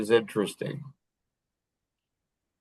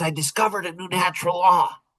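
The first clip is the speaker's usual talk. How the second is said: put-on high, excited, child-like shout. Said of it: "He's all excited".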